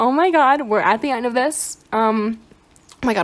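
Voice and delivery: shaky, trembling, wavering, unsteady voice. Reaching the end of the video, the speaker talks with a shaky voice. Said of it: "my voice is actually shaking".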